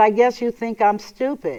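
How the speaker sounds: plain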